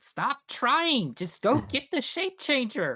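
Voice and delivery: very high voice, muffled as if behind a door. Narrating to the players what they hear from behind a door: muffled voice through a door. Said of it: "Through the muffle of the door".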